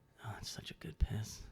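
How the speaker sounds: eerie, creepy, breathy whisper under the breath. Retelling what the guy next to him said: imitating a creepy whisper. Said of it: "a creepy, like, whisper".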